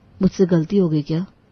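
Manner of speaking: ordinary delivery, nothing marked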